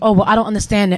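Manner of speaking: plain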